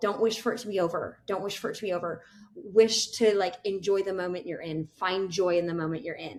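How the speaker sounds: plain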